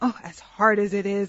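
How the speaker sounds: sarcastic tone. Joking about having to go on to talk about health topics: sarcastic tone. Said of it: "Oh, the sarcasm".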